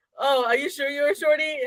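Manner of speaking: high-pitched, prying, quizzing tone. Retelling how a guy acted when he showed up: imitating a guy's words. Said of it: "that guy releases up here acting like".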